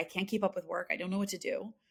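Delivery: put-on tearful voice. Retelling a call to the mother while not sleeping: reenacting own past crying. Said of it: "At this point, I'm crying".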